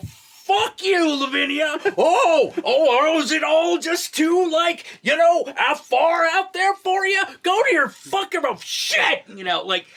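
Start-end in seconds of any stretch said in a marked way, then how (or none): 0.0-8.4 put-on over-the-top actor outburst, higher. Describing how the film performance escalates: over-the-top Nicolas Cage impression. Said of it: "he goes, like, full A, B, C".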